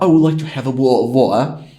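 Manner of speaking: British accent, deliberately put on. Demonstrating other accents after their normal american english, british accent. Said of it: "the second one would be the British accent".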